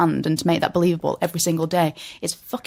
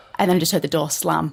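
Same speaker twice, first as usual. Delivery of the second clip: ordinary delivery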